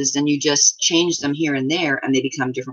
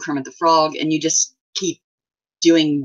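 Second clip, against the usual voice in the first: ordinary talk, nothing marked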